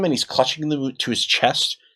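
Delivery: ordinary delivery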